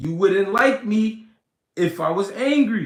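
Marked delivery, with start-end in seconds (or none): none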